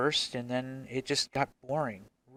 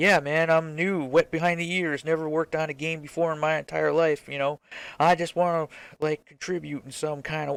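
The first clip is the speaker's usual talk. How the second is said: put-on American Southern accent; 3 semitones higher, 6 dB louder than usual. Game developer imagining starting over as a newcomer, southern accent. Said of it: "I don't know why I'm using a southern accent".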